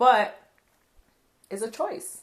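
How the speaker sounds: high, teary, choked-up voice.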